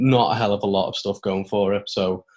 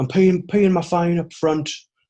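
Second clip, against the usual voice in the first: convincing put-on Irish accent, pitched up; 9 semitones higher, 4 dB louder than usual. Quoting a wrestler's catchphrase while teasing her: Irish accent. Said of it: "credit to the Irish accent ... yours was impeccable".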